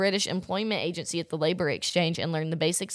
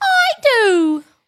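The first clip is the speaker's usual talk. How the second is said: very high, loud, yawning, bad British accent; 13 dB louder than usual. Imagining a voice-actor couple's wedding vows, in a bad British accent. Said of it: "That was like a bad British".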